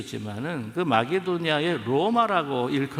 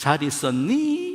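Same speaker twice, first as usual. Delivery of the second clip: put-on Seoul accent with 있었니 lifted at end; 2 semitones higher than usual. Imitating gyeongsang people trying to speak seoul dialect: fake seoul accent, rise on 있었니. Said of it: "끝에만 올리면 된대요".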